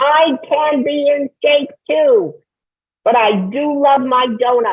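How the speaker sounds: very high-pitched, slow, drawn-out character voice. Doing an impression on the radio: Janet Yellen impression. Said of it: "I can do my Janet Yellen impression".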